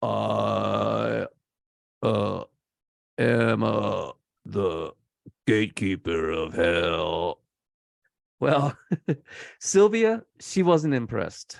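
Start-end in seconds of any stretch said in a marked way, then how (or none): 0.0-7.4 very slow, low, flat brain-dead drone. Imitate a ninth-grade dropout as he spoke in the footage, imitating a guy's monotone. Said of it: "he spoke in like a monotone".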